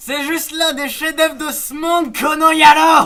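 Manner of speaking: high, loud, outraged, indignant shout.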